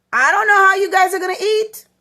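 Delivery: mock, very high, loud, angry scolding yell. Showing what it sounds like to yell at them about cooking: yelling. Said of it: "if you're going to yell at them and be like".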